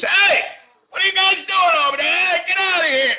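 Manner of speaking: brash cartoonish yell, very high, loud, shrill. Retelling his own first line in the movie, critics call it brash: imitating his own brash loud line. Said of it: "he's too brash".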